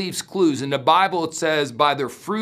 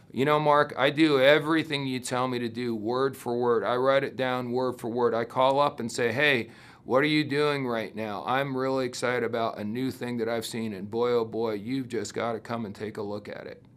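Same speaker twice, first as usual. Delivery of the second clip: exaggerated deadpan, low, flat monotone drone; 5 semitones lower, 6 dB quieter than usual. Imitating a listener who copies advice word for word: put-on monotone. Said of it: "I talked in this sort of a monotone".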